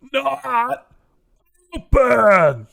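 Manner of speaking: piercing giant yell, very high and very loud. Narrator voicing the giant shouting at the door, Gruinab the giant yelling. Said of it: "Gruinab, by the way, is the giant".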